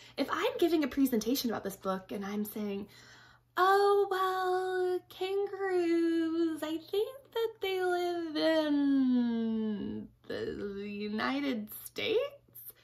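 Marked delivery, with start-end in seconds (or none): 3.6-12.2 very slow, hesitant, unconvinced, pitched up. Showing how a book presentation sounds without confidence: unsure, not-confident voice. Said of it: "Do I sound like I know what I'm talking about?".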